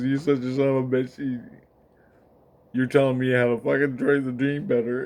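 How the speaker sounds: put-on tearful voice. Retelling what a crying man said to him, imitating someone crying. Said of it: "He's crying".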